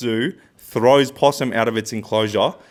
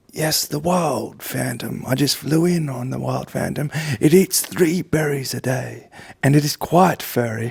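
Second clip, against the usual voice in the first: nature documentary narrator voice. In a sketch where a patient visits the doctor, speaking in David Attenborough voice. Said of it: "You're David Attenborough".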